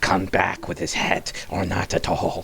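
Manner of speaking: hissing whisper. Narrating the game, voicing a woman above the hole in a hissing whisper. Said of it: "She whispers, like in a hiss".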